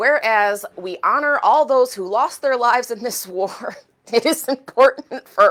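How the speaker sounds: held-back laughter. Reading a group's proclamation aloud, holding back a laugh. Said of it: "I'm trying not to laugh".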